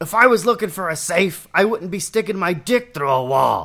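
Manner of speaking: brash, loud, high comic voice. Asked for their favorite Pokemon's noise, the speaker answers with a Danny DeVito impression. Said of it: "My Pokemon's Danny DeVito".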